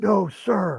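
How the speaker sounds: very high, furious, barked angry yell. Retelling answering a squad leader's accusation: imitating own angry yell. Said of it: "and I yell, I was, I was pissed off".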